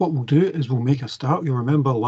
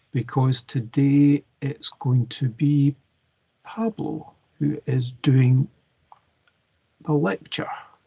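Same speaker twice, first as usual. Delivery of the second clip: speaking really slowly, much slower pace. Lecturer handing the lecture over to Pablo, speaking really slowly. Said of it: "speaking really slowly".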